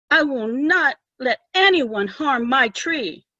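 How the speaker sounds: trembling, drawn-out voice. Reading a story aloud, a girl blocks the woodcutter's path: shaking voice. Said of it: "Her voice shook as she spoke".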